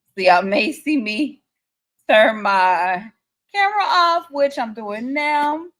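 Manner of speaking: slow, fighting composure, holding back tears. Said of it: "I'm trying not to get emotional".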